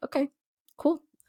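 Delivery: put-on laid-back, unbothered. Speaker retells her dad's reaction to being told the news; imitating a relaxed dad. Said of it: "he was very chill about it".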